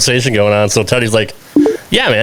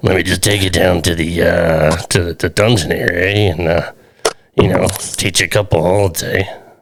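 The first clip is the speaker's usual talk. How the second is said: botched, low put-on old man voice; 6 semitones lower than usual. Imitating the other speaker's late grandfather Stu: bad Stu impression. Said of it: "I can't do it, Stu".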